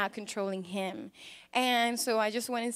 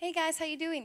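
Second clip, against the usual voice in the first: put-on very calm voice, higher and quieter; 4 semitones higher than usual. Retelling how a man came out the front door, imitating a really calm voice. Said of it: "He comes out just really calm".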